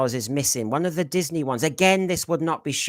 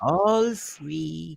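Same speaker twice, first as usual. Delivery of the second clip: evil, creepy, creaky villain voice, freely stretched; 2 semitones higher than usual. A teacher to quietly working pupils, doing a creepy character: evil creepy voice. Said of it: "I'm gonna sound evil now".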